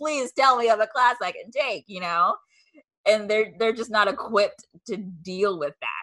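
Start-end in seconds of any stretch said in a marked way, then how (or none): 0.0-1.8 acted, high-pitched, desperate pleading. Retelling a phone call asking about classes, imitating a desperate plea. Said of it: "from the voice, like, that I was using, like, in desperation".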